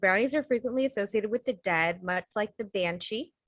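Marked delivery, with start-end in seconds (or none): none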